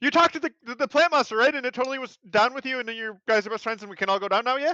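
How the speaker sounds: very high, loud yell from a distance. Playing a character who yells over to an ally. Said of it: "Kedri yells over and goes".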